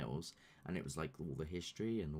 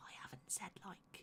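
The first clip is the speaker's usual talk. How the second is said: very hushed whisper, under the breath; 13 semitones higher, 12 dB quieter than usual. Speaker explaining plans not yet told to the others, whispering. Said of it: "I don't know why I'm whispering".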